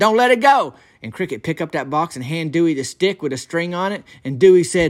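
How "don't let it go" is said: play-acted high hollering call. Retelling how Dewey Morton reacted when Cricket reached for the shoebox: imitating someone hollering. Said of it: "he hollered that out".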